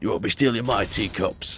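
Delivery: put-on tough London accent. Speaker wishes he could sound like Danny Dyer: Danny Dyer London accent. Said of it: "that tough London sort of accent they have".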